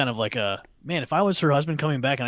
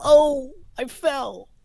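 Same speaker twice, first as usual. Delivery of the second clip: acted-out falling noise, higher and louder; 12 semitones higher, 5 dB louder than usual. Retelling a movie scene, imitating the sister-in-law falling. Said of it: "her sister-in-law does the whole".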